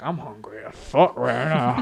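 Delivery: fake drunken manner. Retelling own line from a show as a drunk character: imitating a drunk character. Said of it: "my character was drunk".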